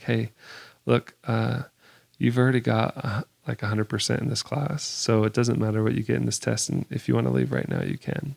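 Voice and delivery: quiet, hushed, close, half-whispered. Retelling what he said at the front of the classroom, half-whispering. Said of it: "he's kind of whispering to me".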